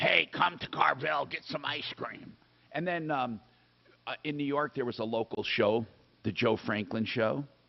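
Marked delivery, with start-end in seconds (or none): 0.0-2.3 rough, creaky, tough gangster voice. Speaker recalls old ice cream shops, imitating the Carvel ad guy's gangster voice. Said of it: "the guy sounded like a gangster".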